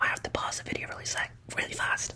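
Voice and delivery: fast, hurried, unvoiced whisper.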